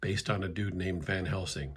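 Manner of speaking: ordinary delivery, nothing marked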